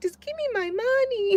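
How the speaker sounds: put-on very high, tiny little-kid voice. Speaker quoting their little niece, imitating Tootie's little voice. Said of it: "she be saying that with her little voice".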